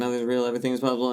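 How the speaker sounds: very fast, rattled-off cartoon demon voice. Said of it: "he says it so fast".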